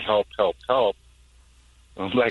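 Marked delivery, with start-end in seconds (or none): none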